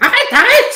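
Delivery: tiny, very high, very loud, shrill little voice. Storyteller voicing a small creature in a tree shouting at the group: small voice. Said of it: "tu entends une petite voix qui fait".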